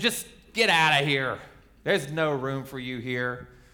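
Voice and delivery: mean, nasty, dismissive tone. Imagining the innkeeper turning the couple away, imitating a nasty tone. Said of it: "in a nasty tone".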